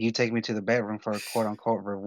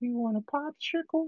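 put-on old-man cartoon voice, much higher; 5 dB quieter than usual. Retelling a buddy's bit, quoting the Family Guy old guy: Herbert voice from Family Guy. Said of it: "does the that freaking voice from the Family Guy, the old guy".

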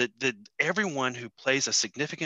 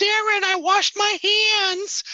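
put-on Boston accent, very high and drawn-out; 8 dB louder than usual. Retelling how a relative calls to him from the kitchen, in a put-on boston accent. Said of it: "Is that her accent?".

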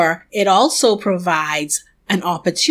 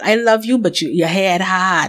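put-on fond but firm scolding tone. Retelling how God spoke, imitating a loving parent scolding a hard-headed child. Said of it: "with a tone that I can only describe as what a parent who loves their child".

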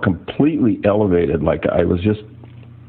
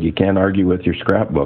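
ordinary talk, nothing marked

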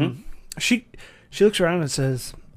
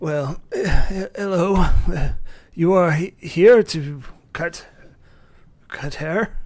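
put-on elderly butler voice, louder; 3 semitones higher, 4 dB louder than usual. Voicing an old butler greeting the visitors at the door: old butler voice. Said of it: "this older, uh, butler comes out. Old, like, seventies old. He's like".

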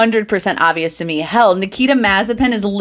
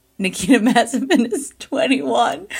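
speaking while laughing and giggling. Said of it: "I can't even say that without laughing".

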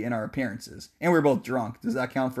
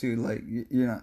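quieter, imitated stuttering and stammering; 3 semitones lower, 5 dB quieter than usual. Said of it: "I'm, like, stuttering".

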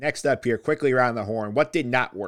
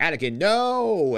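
mock high screamed cry, the "no" long and drawn-out; 6 semitones higher than usual. Retelling a scene where a character cries out: imitating a scream. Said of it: "basically screaming".

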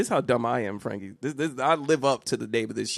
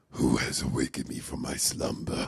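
eerie, creepy possessed horror-film whisper; 12 semitones lower, 4 dB quieter than usual. Retelling his wife waking like a horror movie: imitating a changed creepy horror voice. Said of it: "her voice changed".

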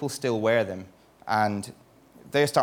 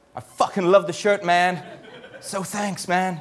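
put-on higher-pitched American accent; 8 semitones higher than usual. Reading out a quote from a snowboard magazine editor, in Tom's American accent. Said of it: "I can't not read it in his American accent".

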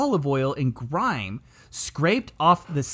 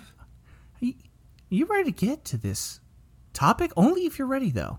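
put-on soft, gentle tone, higher; 7 semitones higher than usual. Restarting a greeting after coming on too strong: mock gentle delivery. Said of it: "I should be more gentle".

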